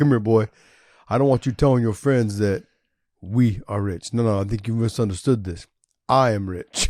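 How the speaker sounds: drops into a deep, low, weighty voice. Retelling what a father told his son, imitating a dad's deep voice. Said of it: "his deep voice".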